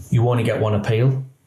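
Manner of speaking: normal talking voice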